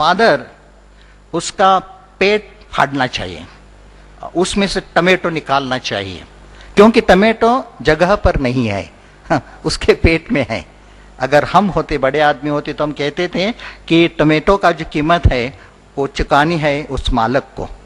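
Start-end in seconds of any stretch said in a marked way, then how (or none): none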